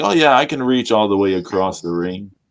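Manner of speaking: ordinary talk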